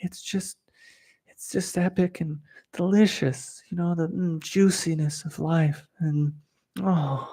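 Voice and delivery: put-on constricted throat. Illustrating how some spiritual meditation teachers talk, imitating a constricted throat. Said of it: "illustrate the constriction in their throat".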